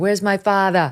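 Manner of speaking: put-on Boston accent voice. Quoting the goalie as he skates around on the tape, in Jim Craig's Boston accent. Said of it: "with his Boston accent".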